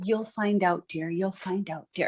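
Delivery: imitated hushed voice. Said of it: "everything was in a hush, hush voice".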